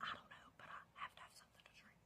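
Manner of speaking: mock whispering. Retelling her past words to the guy in the car: imitating her own whisper. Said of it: "Why are you whispering?".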